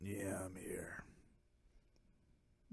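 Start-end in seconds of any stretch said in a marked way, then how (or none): 0.0-1.0 slow, soft, whispered cool voice. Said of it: "That's a cool voice".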